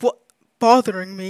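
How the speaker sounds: put-on deep scorpion character voice. Asked what a scorpion sounds like, speaker voices it in a deep scorpion voice.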